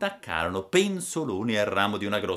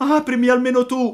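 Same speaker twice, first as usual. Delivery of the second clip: very high, very loud tearful crying shout; 8 dB louder than usual. Narrating Pinocchio's plea at a door; shouting, crying and pleading. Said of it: "gridò Pinocchio piangendo e raccomandandosi".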